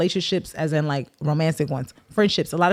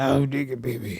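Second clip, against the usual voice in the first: put-on filthy old man voice; 4 semitones lower, 3 dB quieter than usual. Imitating the voice the other speaker puts on: imitating a filthy old man voice. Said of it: "why you put that voice on everything I say".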